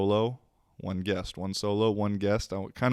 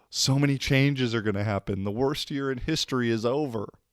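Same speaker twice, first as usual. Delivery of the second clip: ironic, sarcastic tone, not meaning a word; 4 semitones higher than usual. Talking about the end of twenty twenty: sarcastic. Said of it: "I'm being sarcastic".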